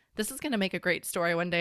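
ordinary talk

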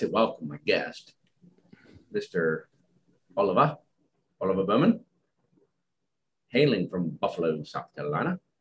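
slight Australian accent slipping in. Welcoming your guest on the show, slipping a little Australian. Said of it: "I just went a little Australian".

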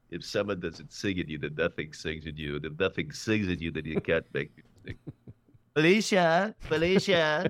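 low, swooping, nasal voice. Showing an impression of an actor playing a conductor: Bradley Cooper as Leonard Bernstein. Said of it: "I do Bradley Cooper, Leonard Bernstein".

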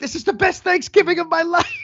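gleeful villain voice. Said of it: "And Owen's like".

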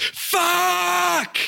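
very high-pitched pained yelp. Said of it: "my first reaction was this".

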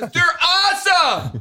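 very high, shrill, high-pitched shouting. Praising something to the others: yelling. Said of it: "Sir, you're yelling".

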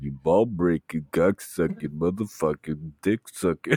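whispered put-on character voice. Quoting a movie character who leans in, imitating a whisper. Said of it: "whispers it to you".

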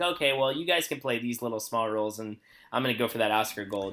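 ordinary talk

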